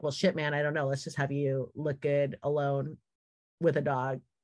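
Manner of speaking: normal talking voice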